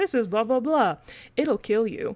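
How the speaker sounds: calm, unbothered, matter-of-fact, no-fuss delivery. Imitating a gardener on a garden tour: imitating a matter-of-fact calm gardener. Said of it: "so matter of fact and, like, calm".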